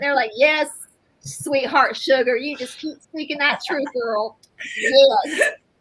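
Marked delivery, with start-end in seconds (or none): 0.4-4.4 put-on Southern accent. Imagining an ancestor's encouragement from the other side, in an imitated southern accent. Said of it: "they were saying it in their southern accent".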